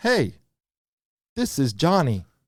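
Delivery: mechanical, automated robot caller voice. Retelling a Medicare robocall to listeners, in a robocall robot voice. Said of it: "they like to call with the robot voice".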